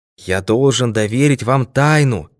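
ordinary delivery, nothing marked

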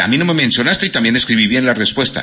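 ordinary talk

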